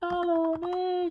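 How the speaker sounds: very high, loud, silly stupid-sounding voice.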